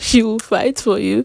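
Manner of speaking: loud words spoken through laughter. Recapping what one person said about another, laughing while talking. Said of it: "I don't know why I'm laughing".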